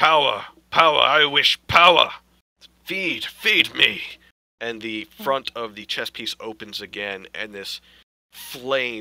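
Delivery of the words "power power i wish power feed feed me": very loud, booming, blaring high cry. Narrating a story, the speaker voices a talking chess piece in a blaring voice. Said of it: "in this blaring tone of voice".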